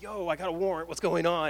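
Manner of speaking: acted panicked, freaked-out voice. Retelling calling the number about a warrant, acting out freaking out. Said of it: "And I'm freaking out".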